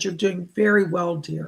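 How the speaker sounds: ordinary delivery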